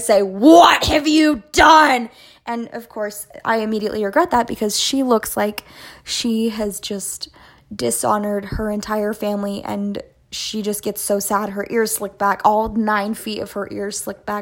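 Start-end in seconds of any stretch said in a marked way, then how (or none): 0.2-2.1 put-on high, loud, scary mom voice. Speaker retells scolding her after finding the protein powder: scary mommy voice. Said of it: "in my scary mommy voice".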